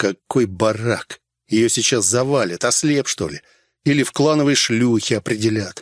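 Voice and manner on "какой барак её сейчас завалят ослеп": usual speaking voice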